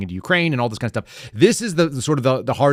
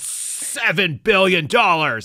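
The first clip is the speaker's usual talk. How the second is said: mock abruptly raised, pitched-up voice; 7 semitones higher than usual. Mocking how he says numbers, the speaker imitates his raised voice. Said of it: "He's like".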